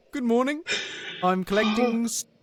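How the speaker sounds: put-on New Zealand accent. Retelling a TikTok video, imitating a New Zealand man. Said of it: "I'm now saying that to Jonna".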